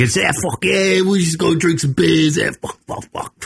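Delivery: put-on drawling New York accent. Speaker showing the typical New York douchebag voice they like doing: fake lazy New York accent. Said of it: "just lazy New York voice guy".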